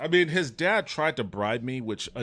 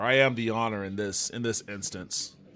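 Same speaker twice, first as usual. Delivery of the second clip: ordinary delivery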